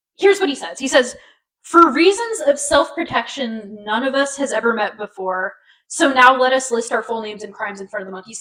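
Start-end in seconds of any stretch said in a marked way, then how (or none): none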